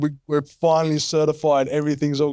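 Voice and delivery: words choked out through tears, crying while talking. Retelling a partner's phone call with news of certification: imitating someone crying. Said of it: "she's crying".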